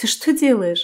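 involuntary smile while speaking. Her husband lifts her into his arms and she asks him; involuntary smile. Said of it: "непроизвольно улыбаюсь".

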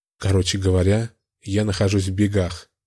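plain reading voice

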